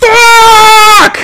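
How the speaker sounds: acted, angry, shrill, drawn-out delivery. Retelling missing the nail again, retelling an angry curse. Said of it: "I got pissed".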